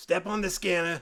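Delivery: put-on very loud, high old-lady Boston accent. Narrating a scene, the old lady at the scanner line speaks, old lady boston accent. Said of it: "Why are they all Boston?".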